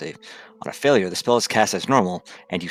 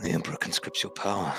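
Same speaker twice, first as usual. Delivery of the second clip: muttered, hushed whisper under the breath; 7 dB quieter than usual. Voicing a character casting a new spell: whispering under his breath. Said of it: "he just whispers under his breath".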